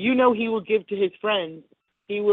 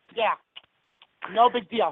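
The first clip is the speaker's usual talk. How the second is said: put-on New York accent, chewing gum. Showing how to talk for a show done in New York accents: New York accent, chewing gum. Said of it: "you gotta chew a lot of gum".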